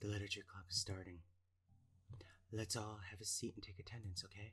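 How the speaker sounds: put-on radio announcer voice. Voicing a character for tonight, the speaker gives her an NPR radio voice. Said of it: "N P R voice".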